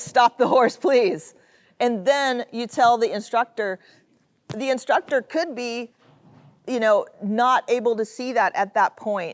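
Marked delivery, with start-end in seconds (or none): 0.0-1.3 acted-out voice full of eager excitement. Showing how one rider calls to another to stop the horse, excited. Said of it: "excitement in her voice".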